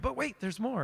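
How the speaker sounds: late-night TV pitchman delivery. Retelling a pitch to prospects, late night TV pitchman voice. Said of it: "like a late night T V thing".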